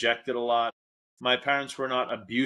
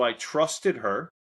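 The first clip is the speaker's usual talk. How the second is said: plain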